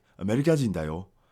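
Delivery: put-on Japanese spoken in the heaviest, laid-on Nigerian accent. Retelling a man he met who spoke with the thickest accent: thick nigerian accent. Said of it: "with the thickest Nigerian accent".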